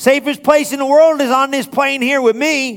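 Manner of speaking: very high, loud, full-voiced, proclaiming tone. Retelling a scary flight where people were crying, the speaker repeats his loud declaration.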